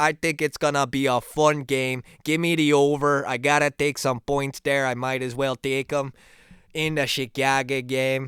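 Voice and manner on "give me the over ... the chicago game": put-on Chicago accent. Giving football betting picks: Chicago accent. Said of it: "I'm talking like a guy from Chicago".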